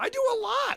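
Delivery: voice pushed really high-pitched. Answering a suggestion to do more around the house: really high voice. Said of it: "That was a really high voice".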